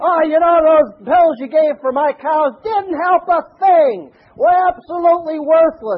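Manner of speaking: put-on booming farmer voice. Retelling what a farmer said to the vet in the diner, booming voice. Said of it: "this farmer had a booming voice".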